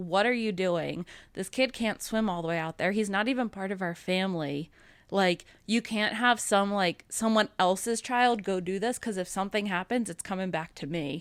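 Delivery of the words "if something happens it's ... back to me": ordinary talk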